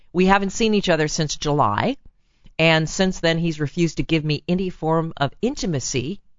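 plain

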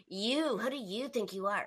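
soft, nasty sneering voice. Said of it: "the nasty tone because you just said it".

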